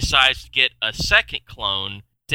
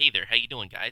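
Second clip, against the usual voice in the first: put-on prissy voice, said quieter; 7 dB quieter than usual. Describing four Michael Keatons in a movie, doing the prissy feminine one. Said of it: "The other one's very feminine".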